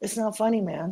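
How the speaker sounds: put-on deadpan delivery. Retelling a serious comeback on a podcast: imitating a dead-serious straight face. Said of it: "Bobby Lee had the straightest face".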